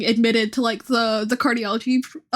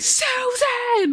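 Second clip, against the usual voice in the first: very high, carrying calling yell; 12 semitones higher than usual. Showing a vocal stim copied from the patient: imitating a woman yelling Susan. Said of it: "I'll just be walking around somewhere just going".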